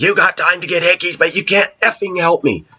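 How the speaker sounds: high-pitched mock outburst, tirade. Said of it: "Explodes all over it".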